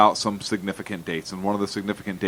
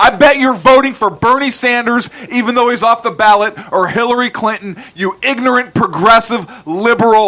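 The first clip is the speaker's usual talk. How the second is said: put-on yelling, higher and louder; 10 dB louder than usual. Retelling an answer to a question about December seventh: retelling a scream. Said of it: "That's what I was screaming in my head".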